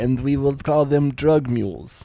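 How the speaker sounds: awful, terrible fake Russian accent. Acting out a Russian woman's line, in a bad Russian accent. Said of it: "That is the worst accent I've ever heard".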